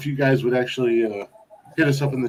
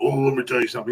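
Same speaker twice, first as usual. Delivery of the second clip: put-on soft-spoken southern country accent; 3 dB quieter than usual. Retelling what an ex-wife's grandfather said: imitating a soft southern country accent. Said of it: "soft tone, uh, country, like, Southern country accent".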